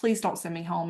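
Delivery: imitated pleading voice. Retelling begging a nurse not to be sent home: retelling own begging. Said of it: "begged her".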